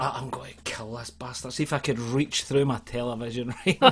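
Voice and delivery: ordinary talk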